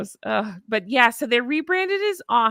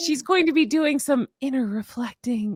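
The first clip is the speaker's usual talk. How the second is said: put-on breathy, sultry voice; 3 semitones higher than usual. Describing her new podcast, imitating a breathy, sexy voice. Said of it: "I say it like that 'cause everything was in that breathy".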